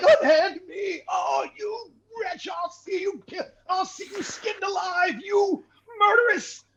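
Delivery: protesting character voice. A game master voices a character being hauled away by the players, protesting captive character voice. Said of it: "He's like".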